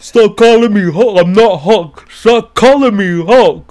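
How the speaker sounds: bad, booming, high-pitched yell. Imitating an angry reaction to being called Hulk: Lou Ferrigno impression. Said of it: "That doesn't even sound anything like".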